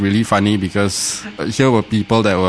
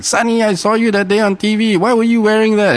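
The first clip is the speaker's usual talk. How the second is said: high-pitched, shrill, shouting voice; 13 semitones higher than usual. Retelling how a mom shouts at her son over the phone: imitating mom shouting. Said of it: "his mom starts shouting at him like".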